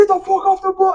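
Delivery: mock yelling, very high-pitched. Retelling a man on the bus ordering everyone off: imitating someone yelling. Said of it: "he's not yelling yet".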